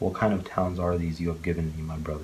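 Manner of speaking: plain reading voice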